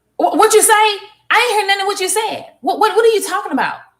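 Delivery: very high, rude, dismissive tone. Showing what using your outer voice with a person sounds like: rude, dismissive tone. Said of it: "what I mean by outer voice is like this. ... That's fucking rude and disrespectful".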